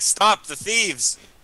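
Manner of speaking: high yell. In a tabletop game, chasing thieves and calling out to anyone, yelling. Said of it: "I'm yelling".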